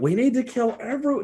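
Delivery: shrill yelled call, very high. A player voices their character in a game, shouting. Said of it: "I shout".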